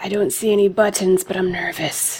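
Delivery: hushed whisper, under the breath. Kneeling before the chest, the character whispers back to a companion: whispering. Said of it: "I whisper back".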